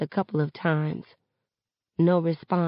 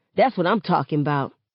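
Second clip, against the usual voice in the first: plain reading voice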